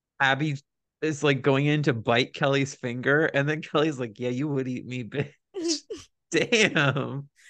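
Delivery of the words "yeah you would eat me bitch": mock, put-on, quieter muttering under the breath. Recapping reality tv drama, the speaker quotes a cast member, retelling an under-breath mutter. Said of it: "says under her breath".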